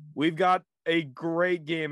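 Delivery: slow, dry, slightly facetious sports-show host voice. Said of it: "I say that a little facetiously".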